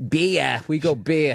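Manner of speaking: put-on Boston accent with vowels drawn out long. Describing people they met who had a boston accent, in a boston accent. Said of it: "they kind of had like a Boston accent".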